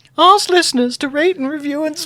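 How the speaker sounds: squeaky voice, pitched very high. Imitating the co-host asking listeners to rate and review: imitating the co-host's voice. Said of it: "That is not what I sound like".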